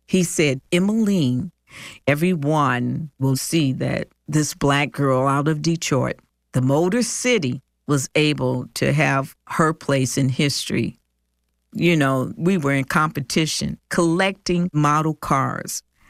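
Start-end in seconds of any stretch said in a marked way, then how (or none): none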